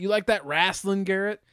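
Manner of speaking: put-on patronizing, condescending, talking-down tone. Asking if saying pro wrestling sounds snobby: mock condescending tone. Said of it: "Does it feel like I'm condescending to you".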